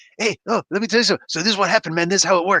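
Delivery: conversational, casual, friendly explaining voice. Imagining a character showing up to explain the escape: Michael Pena impression. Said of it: "freaking Michael Pena come over and explain".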